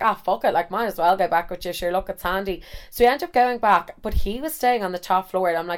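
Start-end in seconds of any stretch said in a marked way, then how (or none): none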